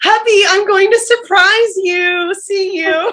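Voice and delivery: sugary, cheerful high voice. Retelling what a woman said, switching into her put-on sweet, happy Yaz voice. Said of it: "puts on her sweet, happy Yaz voice".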